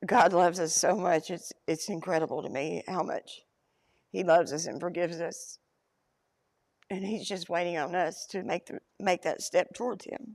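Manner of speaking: crying, tearful voice through the words. Recounting being saved in Louisville, crying. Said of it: "sorry, I'm such a crybaby".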